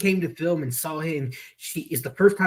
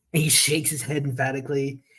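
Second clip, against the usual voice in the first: ordinary talk, nothing marked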